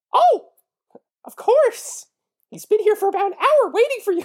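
tiny, very high, squeaky cartoon-mouse voice. Reading a woman's reply in a story, in a squeaky cartoon-mouse voice. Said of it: "You sound like Mickey Mouse".

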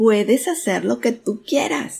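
bursting with eager enthusiasm. Reading a story aloud, a father calls out to an echo: very enthusiastic. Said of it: "dijo con mucho entusiasmo".

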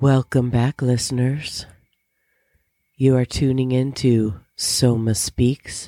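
seductive, sultry put-on radio host voice. Opening a podcast episode by welcoming listeners in a put-on sexy voice. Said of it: "this is my sexy voice".

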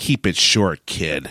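acted, patronizing, curt, condescending tone. Retelling what the guy at the cemetery said: imitating a condescending remark. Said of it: "he looks down at me condescendingly and he says".

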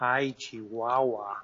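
acted mumbling under breath. Showing how shocked people exclaim: imitating someone mumbling under their breath. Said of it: "mumbling under their breath".

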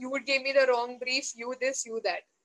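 normal talking voice

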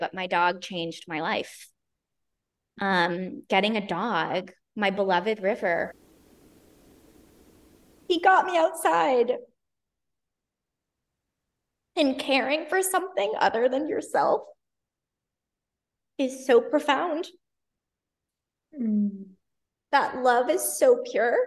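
slow, tearful voice, crying through the words. Speaker talking about their beloved dog, crying. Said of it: "I can't believe I'm crying so much over my dog".

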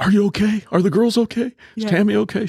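frantic, panicked, worried, very high-pitched voice. Retelling his mother's reaction when he called her, imitating her panicking. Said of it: "She was panicking".

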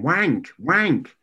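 high, loud shouting. Retelling calling louder to a man she thought was deaf: retelling shouting. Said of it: "So I'm shouting".

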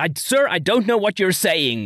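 mock loud deliberate voice. Retelling how she answered him: imitating someone saying loudly. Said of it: "and saying loudly".

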